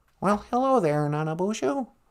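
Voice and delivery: frog puppet voice. Greeting the show as a caller: Kermit the Frog voice. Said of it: "Kermit the Frog, welcome to the show".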